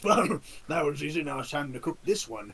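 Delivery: monster voice of a troll. Voicing a troll after knocking a player away: troll voice. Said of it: "the troll two, like, pats its hands off and goes".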